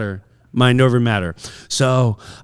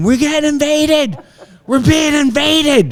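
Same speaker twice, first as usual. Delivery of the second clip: play-acted very high running scream; 13 semitones higher than usual. Retelling running and hiding behind a bush: imitating own past screaming. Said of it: "running, screaming, saying".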